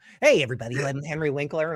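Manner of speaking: put-on neurotic, grandma-like voice. Imitating Henry Winkler greeting everybody: Henry Winkler impression. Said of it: "he's like my grandma".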